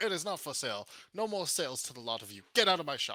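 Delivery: screaming in a high voice. Voicing a shopkeeper who refuses to sell to the players: screaming. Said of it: "screaming at you".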